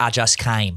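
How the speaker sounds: put-on American Southern accent. Retelling what a friend in the background says: put-on Southern accent. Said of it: "that was my Southern accent".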